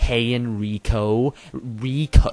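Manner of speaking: overdone, over-pronounced American accent. Showing how people in America say the name Rico: exaggerated American accent. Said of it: "If you're in America, you go".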